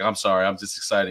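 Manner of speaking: ordinary talk, nothing marked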